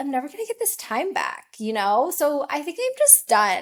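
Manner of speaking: ridiculous put-on sarcasm, high with swooping pitch. Mimicking your spouse's past words back to them: put-on sarcastic voice. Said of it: "you're saying that with this like ridiculous sarcastic voice".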